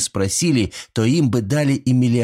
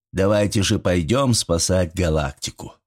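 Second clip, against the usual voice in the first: ordinary delivery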